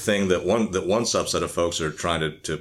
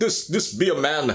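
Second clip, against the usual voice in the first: high-pitched put-on Jamaican accent, ranting energetically; 9 semitones higher than usual. Imagine how a man would go off on a show, in a put-on Jamaican accent. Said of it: "he's going off on his Jamaican accent".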